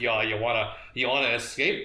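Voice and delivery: ordinary delivery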